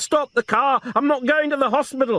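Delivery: very high, shrill, near-hysterical, insistent voice. Reading a scene where she begs them to stop the car: shrill and insistent. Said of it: "Her voice was shrill and insistent".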